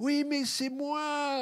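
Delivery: put-on very high, slow, English-accented French. Retelling a woman insisting it's really her, imitating Julia's English accent. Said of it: "avec l'accent anglais".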